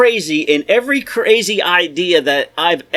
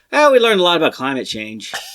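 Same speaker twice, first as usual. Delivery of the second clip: ordinary talk, nothing marked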